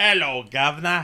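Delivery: loud, working-class Cockney accent. Asked whether they know the Cockney accent, answering in a Cockney accent. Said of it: "Do you know the Cockney accent?".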